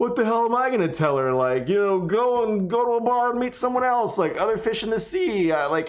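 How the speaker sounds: high-pitched, sarcastic, scoffing tone. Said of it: "you telling yourself sarcastically".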